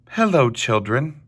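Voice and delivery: sweet, sweet-toned voice. Narrator reading a children's story, a woman greets the class in a sweet voice. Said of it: "someone said in a sweet voice".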